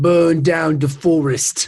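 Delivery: very slow, loud, every word heavily drawn out. Quoting a film line as the actor says it: Michael Caine impression. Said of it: "That's how he says it like that".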